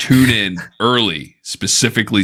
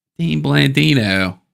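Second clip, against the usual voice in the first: put-on Pittsburgh accent, pitched up; 8 semitones higher than usual. Showing another speaker the best name to say this way, in a put-on Pittsburgh accent. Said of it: "the best name to say with a Pittsburgh accent".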